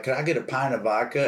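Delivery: ordinary delivery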